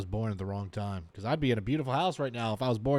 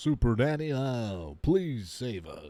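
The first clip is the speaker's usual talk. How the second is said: slow, drawn-out preacher voice. Reacting to a family on screen, imitating a preacher voice. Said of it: "He's got that preacher voice".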